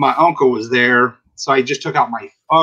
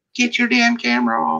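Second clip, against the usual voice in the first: shrill, very high-pitched yelling; 10 semitones higher than usual. Retelling how a shop worker reacted to being scanned: imitating a shop worker yelling. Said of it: "she just started yelling".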